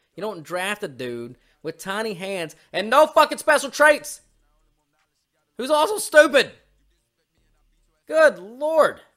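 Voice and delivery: shouting. Ranting to one other person while talking together, yelling. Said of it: "why am I yelling?".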